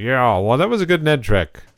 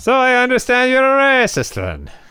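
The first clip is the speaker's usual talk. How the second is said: put-on Irish accent, higher pitch; 13 semitones higher than usual. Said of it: "sorry about the Irish accent".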